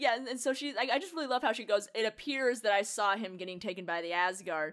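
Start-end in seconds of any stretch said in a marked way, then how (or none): none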